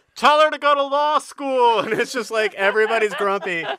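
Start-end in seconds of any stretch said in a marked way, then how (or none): 0.2-1.8 loud, high-pitched shouted yell. Telling a story about grumpy people on a bus, retelling a yell. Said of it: "So you hear people yell".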